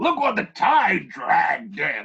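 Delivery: terrible put-on pirate woman voice, loud, swooping. Retelling a film scene, imitating a character: imitating a terrible voice. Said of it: "doing this in terrible voice".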